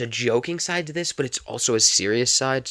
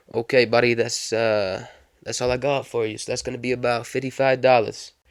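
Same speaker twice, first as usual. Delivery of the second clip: clumsy, put-on New York accent. Retelling a cab ride as the passenger reaches his destination; New York accent. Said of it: "Don't judge my New York accent".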